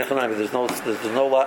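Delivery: ordinary delivery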